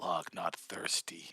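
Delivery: snarling, growled. Voicing a character refusing a potion: snarling. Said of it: "Kinda snarls".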